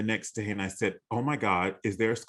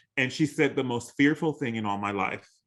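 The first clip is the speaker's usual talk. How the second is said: usual speaking voice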